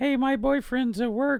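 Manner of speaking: mock teen girl voice, pitched way up.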